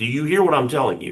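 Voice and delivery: mock stern, dead-serious tone. A parent recounts warning their child about Christmas, retelling getting real serious. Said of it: "just got real serious".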